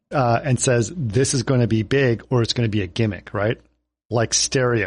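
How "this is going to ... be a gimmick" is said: ordinary talk, nothing marked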